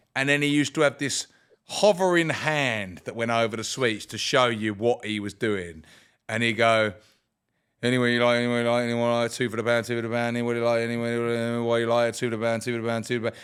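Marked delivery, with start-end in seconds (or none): 7.9-13.4 mock nonstop monotone patter, flat and continuous. Recalling a sweet seller's endless calls, imitating his nonstop monotone patter. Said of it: "this monotone voice that never stopped".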